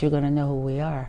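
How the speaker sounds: ordinary talk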